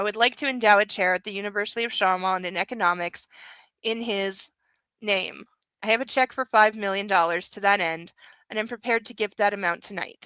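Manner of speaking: ordinary delivery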